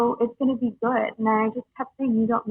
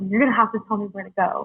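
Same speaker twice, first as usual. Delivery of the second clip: nasty, unkind, mean and harsh tone. Retelling what the sister said in the car: imitating a mean tone. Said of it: "she was so mean to me".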